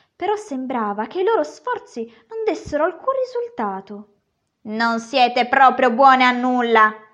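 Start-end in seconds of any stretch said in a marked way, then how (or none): 4.6-6.9 very loud, aggrieved, resentful outburst. Reading a story aloud, the dwarf scolds the girls, resentful. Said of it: "disse il nano con aria risentita".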